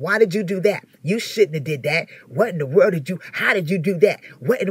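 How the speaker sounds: put-on discouraging voice. Preaching on discernment, acting out the enemy's words: discouraging voice of the enemy. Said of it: "The voice of the enemy discourages".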